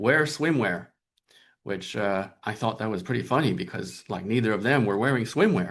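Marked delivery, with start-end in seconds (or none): 0.0-0.9 acted-out very firm, definite, pitched-up delivery. Retelling what a friend answered about what to wear: imitating a very definitive statement. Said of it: "very, very definitively, she said".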